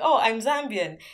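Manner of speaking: ordinary talk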